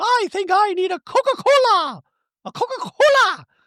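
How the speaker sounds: very high, drawn-out musing, talking to herself. Retelling a reality show scene, imitating Dorit talking to herself. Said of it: "she goes".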